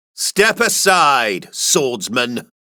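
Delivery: scornful, contemptuous stress on swordsman. Narrator voices one of five gangsters addressing a swordsman, scornful stress on 'swordsman'. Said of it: "emphasizing the last part with scorn".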